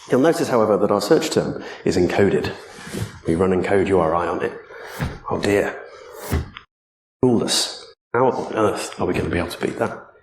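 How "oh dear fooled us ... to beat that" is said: dry, tongue-in-cheek, mildly sarcastic mock dismay. Talking an audience through code on a slide, somewhat sarcastic. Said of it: "somewhat sarcastically".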